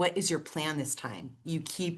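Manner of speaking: mock, very stern, firm, severe tone. Retelling what a brother said about the plan: imitating a stern brother. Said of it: "very stern with me".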